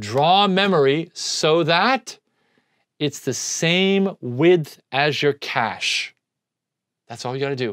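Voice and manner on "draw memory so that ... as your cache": very slow, deliberate, word-by-word delivery. Lecturer giving students advice for the final exam, very slow. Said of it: "I'm going to say this very slowly".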